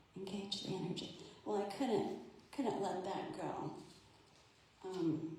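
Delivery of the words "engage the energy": small, gentle, soft, hushed little voice. Retelling what an inner voice said: soft little voice. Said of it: "a soft little voice that said".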